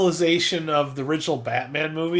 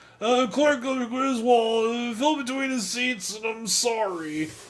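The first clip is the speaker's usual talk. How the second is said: put-on slow, high, tipsy, sloshed-sounding drunken drawl; 8 semitones higher than usual. Imitating a movie character who fell between the seats: imitating a drunk-sounding voice. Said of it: "you sounded drunk like that".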